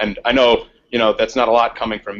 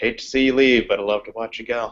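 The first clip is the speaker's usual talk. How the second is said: private half-whisper to oneself, under the breath; 3 dB quieter than usual. Playing a character who turns around after a goodbye: half-whispering to oneself. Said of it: "I whisper to myself as I turn around".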